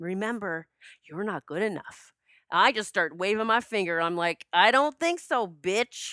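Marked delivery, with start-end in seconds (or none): 4.5-6.1 play-acted forceful, slow, deliberate, powerful delivery. The speaker acts out answering their inner voice of self-doubt, retelling a powerful retort. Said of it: "I say it with such power".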